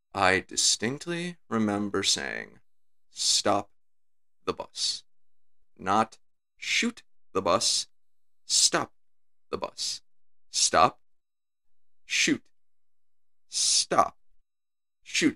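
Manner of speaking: composed, calm, level, unraised delivery. Retelling a game character scolding a soldier: imitating a calm, unraised voice. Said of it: "he carries on the whole conversation so calmly".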